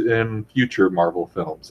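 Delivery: ordinary talk, nothing marked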